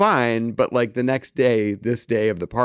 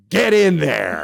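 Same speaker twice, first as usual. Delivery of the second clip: gruff, high, rough, barked shout; 5 semitones higher, 4 dB louder than usual. Retelling how a friend burst back in the room: imitating someone shouting. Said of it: "just shouted at me".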